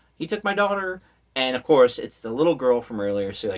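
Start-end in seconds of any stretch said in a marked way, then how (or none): 0.2-1.0 high, panicked, freaking-out tone. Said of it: "like, freaking out".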